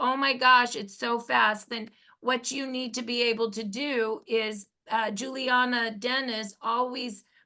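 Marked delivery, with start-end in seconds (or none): none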